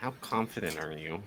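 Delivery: soft, hushed half-whisper, stage-whisper style. Turning to another character in the game to ask something: half-whispering. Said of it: "whisper to him".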